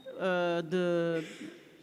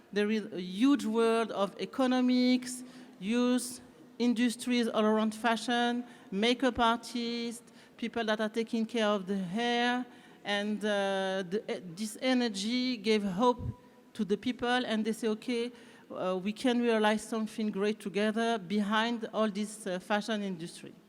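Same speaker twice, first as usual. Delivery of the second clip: English with a little French accent. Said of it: "avec un petit accent français".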